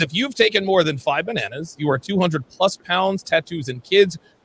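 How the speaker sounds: normal talking voice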